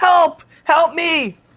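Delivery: very high screaming cry. Describing a trend of people in a store, imitating someone screaming. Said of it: "start screaming like".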